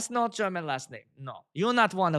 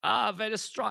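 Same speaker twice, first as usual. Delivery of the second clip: put-on German accent, badly done; 3 semitones higher, 3 dB quieter than usual. Speaker showing how the word strong sounds in a german accent. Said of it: "in the German accent".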